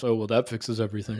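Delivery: muttering under breath.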